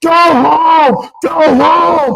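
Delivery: acted, very high screaming yell with home drawn out. Recalling a game watched with their dad: reenacting screaming at umpires. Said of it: "We were screaming at the umpires".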